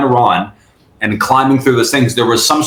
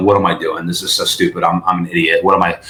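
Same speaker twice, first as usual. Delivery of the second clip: put-on tearful, weepy, crying while talking; 6 semitones lower than usual. Retelling running from a crash, imitating past crying. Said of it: "I started crying and I'm like".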